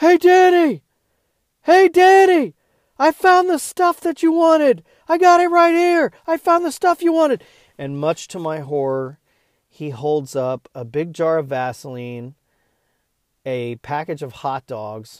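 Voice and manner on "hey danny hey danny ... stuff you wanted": shrill, very loud, very high-pitched yell. Across the produce section, a man yells to the speaker, imitating Brian yelling. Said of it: "I hear Brian from across the produce islands yelling".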